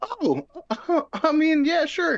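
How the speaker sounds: put-on unbothered casualness. Retelling his reply to a job offer, imitating acting unbothered. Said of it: "I just have to sound like I, I, I, I don't need it".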